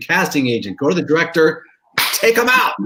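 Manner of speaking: mock screaming, high and rising. Recalling a miscast TV show, the speaker re-enacts screaming at it: retelling own screaming. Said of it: "and I'm screaming".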